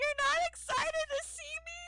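acted-out weepy crying voice, very high and tearful. Retelling how she shows up on game day and starts crying at him, imitating a woman crying. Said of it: "she's like starts crying like".

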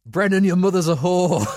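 put-on Irish accent shout. Retelling a heckler in the crowd shouting at a player, imitating a shout in an Irish accent. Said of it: "in an Irish voice, shouted".

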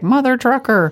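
very high-pitched robot voice. Joking about robot pets that swear a lot, robot voice. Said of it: "to have a robot be like".

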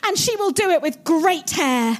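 ordinary delivery

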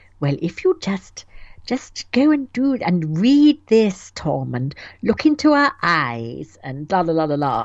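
sugary, coaxing put-on sweet voice, "eyes" drawn out. Describing how Kirsty talks to Tom, imitating Kirsty's syrupy voice. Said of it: "she's doing her special syrupy voice".

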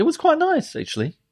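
voice jumping up to very high pitch. Asked how the vegan burger went, the speaker answers in a high voice. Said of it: "That was a high voice".

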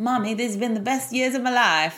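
put-on American accent. Imagining what her clingy child says as he walks in, in an American accent. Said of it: "like in an American accent".

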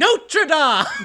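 shrieked, full-throated yell, very high and loud. Retelling what they once yelled: retelling own yell. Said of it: "I remember that I yelled".

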